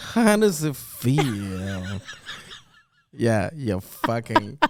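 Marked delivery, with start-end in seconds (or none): 0.0-2.0 very slow, stretched, patronizing, condescending drawl. Mocking the way another speaker just asked a question: imitating a condescending tone. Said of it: "You're like".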